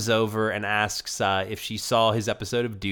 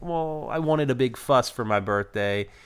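acted sad voice, higher pitch; 3 semitones higher than usual. Retelling a birthday scene, acting out a man's sad reply. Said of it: "being all sad".

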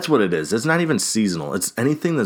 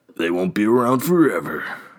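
put-on commercial announcer ad voice. Describing the Veggie Whopper's launch in an Arby's commercial voice. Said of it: "I don't know why I'm doing that voice. That's the Arby's voice".

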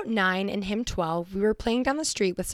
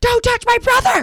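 put-on little girl voice, shrill, full-blast, furious scream; 12 dB louder than usual. Retelling jumping on a kid who hit her brother: imitating a child screaming. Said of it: "screaming at him".

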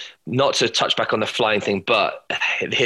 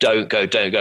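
mock tearful crying voice. Retelling how the trainer begged them not to leave the plane: imitating someone crying. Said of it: "Literally crying".

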